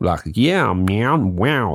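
put-on American accent, landing on the word wow. Showing how to do an american accent, in a put-on american accent. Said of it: "That's a good American accent".

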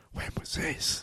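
dismayed whisper, very hushed, barely voiced. Rereading a character's line more dismayed: dismayed whisper. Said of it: "he whispers, dismayed".

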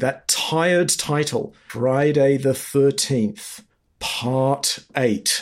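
very slow, deliberate, drawn out word by word. A speaker criticizing slasher sequels says the title very slowly. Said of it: "let's just say it slowly".

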